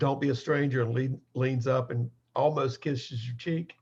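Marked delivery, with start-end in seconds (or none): 0.0-0.8 hushed whisper. Voicing a character who stops a player at the door: whispering. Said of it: "And she whispers".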